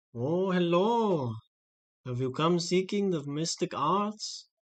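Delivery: put-on slow elderly mystic-like old man voice. Narrating a scene to a player, voicing an old man they meet: old man voice. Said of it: "there's like an old guy there".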